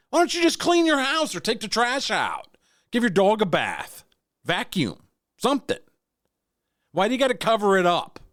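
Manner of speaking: very high, shrill, impassioned shouting. Ranting about a commercial, yelling. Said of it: "don't mean to yell".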